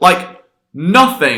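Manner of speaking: NOTHING stretched out slow with wide pitch.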